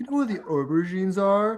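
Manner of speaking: clumsy, bad put-on British accent. Retelling what a british person asked in a shop, in a bad british accent. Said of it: "I can not doing the accent right".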